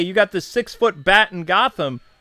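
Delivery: normal talking voice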